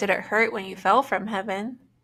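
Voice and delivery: normal talking voice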